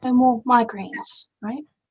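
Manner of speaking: hushed, private-sounding tone. Voicing a character leaning over to a child at the table: lowered voice. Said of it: "Theobald will lower his voice".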